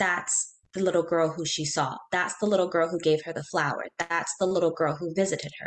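ordinary talk, nothing marked

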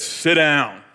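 big, booming, loud voice. Retelling what a big muscular man said to him, in a big booming voice. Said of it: "in a big booming voice".

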